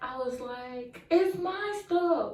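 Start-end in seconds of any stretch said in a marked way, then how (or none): 1.1-2.3 mock very high, tearful, angry crying voice. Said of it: "I'm crying. I'm mad".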